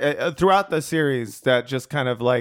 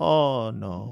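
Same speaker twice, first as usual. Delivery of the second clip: put-on Spanish accent, lower pitch; 3 semitones lower, 3 dB quieter than usual. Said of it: "accents are funny".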